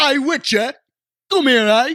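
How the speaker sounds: put-on Cockney accent. Asked to do a Cockney accent, playing someone met in The Witcher: put-on Cockney accent. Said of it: "Do your Cockney accent".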